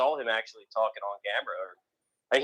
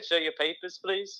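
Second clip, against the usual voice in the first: rough put-on English accent, pitched up; 6 semitones higher than usual. Asked by the other speaker about the accent, repeating the phrase: kind of english accent. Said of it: "kind of English accent".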